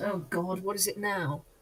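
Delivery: very quiet mumble under the breath. Player speaking as Julian on arrival by carriage, in a quiet mumble. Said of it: "Julian quietly mumbles".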